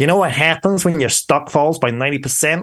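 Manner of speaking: put-on snarling, snarly New York accent. Quoting a man's favourite expression about falling stock, snarly new york accent. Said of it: "If I can impersonate a New York accent on your podcast".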